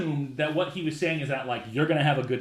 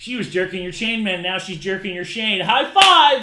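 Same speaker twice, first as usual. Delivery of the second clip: loud, high mocking gym-guy bro talk; 5 semitones higher, 7 dB louder than usual. Acting out how men would quote the line, mocking imitation, making fun. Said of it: "in, like, a mocking, hilarious, like, just making fun".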